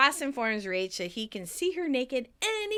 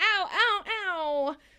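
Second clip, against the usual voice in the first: repeated mock pained yelps, high-pitched, one after another; 6 semitones higher than usual. Recapping a scene, acting out a woman's pained shout. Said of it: "but shouts".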